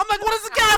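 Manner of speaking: very high, very loud, high-pitched bellowed shouting. Retelling a fishing story, quoting a friend: imitating a shout. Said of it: "you're shouting".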